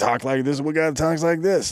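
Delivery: overproduced morning radio DJ. Complaining about a style of voice, the speaker demonstrates an old-timey morning radio DJ voice. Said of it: "the older version of the strip club D J voice that's on morning radio".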